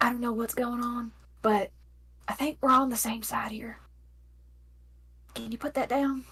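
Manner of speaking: soft, barely voiced whisper. Coming to her senses, she asks someone holding a blade to put it down, whispering. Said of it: "And she just whispers".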